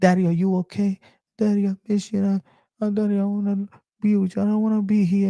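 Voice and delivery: put-on high child whisper. Retelling a late-night phone call from a young son: imitating a child whispering. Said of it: "he's whispering".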